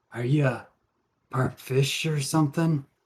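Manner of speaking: attempted whisper. Voicing a character who asks Riley something: attempted whisper. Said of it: "kinda whispers to Riley, or at least tries to whisper".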